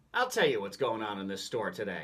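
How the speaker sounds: ordinary talk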